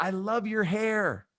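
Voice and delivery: high, drawn-out, unhurried friendly yell. Retelling how an older woman on the street yelled: imitating a woman yelling. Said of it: "She just yelled".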